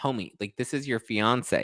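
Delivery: ordinary talk, nothing marked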